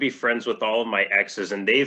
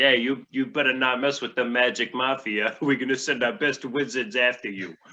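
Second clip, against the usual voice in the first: put-on gangster Boston accent; 3 semitones higher than usual. Retelling a magic mafia boss threatening a wizard in a play, boston accent. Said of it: "these Boston accents come from out of nowhere".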